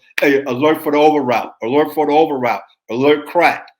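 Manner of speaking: plain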